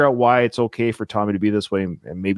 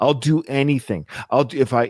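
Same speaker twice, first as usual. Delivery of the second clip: ordinary delivery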